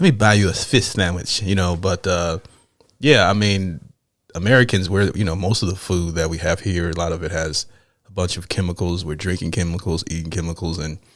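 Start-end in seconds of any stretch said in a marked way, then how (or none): 0.0-1.4 put-on lisping ladies' man voice. Repeating the movie line as used to for years: Ladies' Man lisp impression. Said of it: "I used to say it for years".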